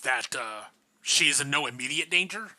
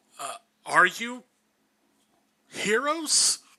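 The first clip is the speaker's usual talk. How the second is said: hesitant stammering voice, much higher pitch; 7 semitones higher than usual. A narrator voices a temple attendant addressing three visitors: stammering temple attendant voice. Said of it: "uh, and he'll and he'll nod to you and he'll go, / I'm, I'm, I'm sorry. I'm, I'm, I'm uh, for, forgive my insolence, my lady. Uh, I just, I, My eyes are like glowing red. uh, um, for, for, forgive, fo".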